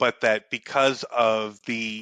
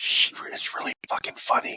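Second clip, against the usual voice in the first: unvoiced, hushed whisper. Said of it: "Maybe I'll say it a little lower".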